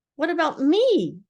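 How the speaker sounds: squeaky, high, small voice. The writer reads Piglet looking up and speaking to him, in Piglet's squeaky voice. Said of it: "said in his squeaky voice".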